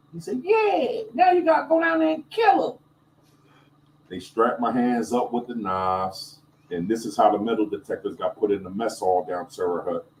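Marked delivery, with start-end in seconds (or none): 0.5-2.8 put-on very high-pitched old man voice. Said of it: "It's just how his voice sounded".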